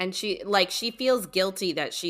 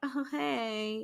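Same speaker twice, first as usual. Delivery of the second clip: mock sarcastic, high, with "hey" stretched out; 6 semitones higher, 8 dB quieter than usual. Retelling how a girl waves at people from school, mock sarcastic greeting. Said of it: "waves at them sarcastically".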